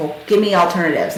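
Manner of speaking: ordinary talk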